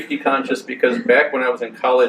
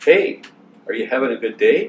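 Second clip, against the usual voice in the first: put-on calm, very soothing, gentle tone. Retelling campus security coming up from behind, in a very soothing voice. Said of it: "this very soothing voice said".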